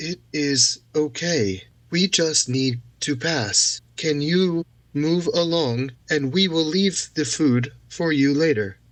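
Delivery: performed storyteller voice, gentle, soothing and calm. Approaching wolves with palms out, asking them to let the group pass: soothing storyteller voice. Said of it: "in kind of a soothing, like like a storyteller's performative voice".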